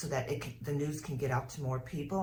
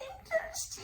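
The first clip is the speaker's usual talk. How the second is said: very high, tiny little voice. Speaker recalls hearing a plant ask for help, in a tiny little voice. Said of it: "this little tiny voice that would go".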